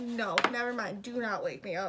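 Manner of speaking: ordinary talk, nothing marked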